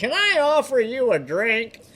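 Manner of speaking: very high, slow, swooping voice. Quoting a movie scene while watching with friends: imitating the Duke. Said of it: "You're imitating the Duke".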